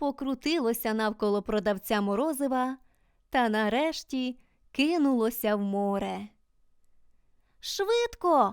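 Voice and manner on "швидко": sudden, high, ringing yelled shout. Reading a character's cry as something rushes into the sea, shouting. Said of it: "закричала Джуді".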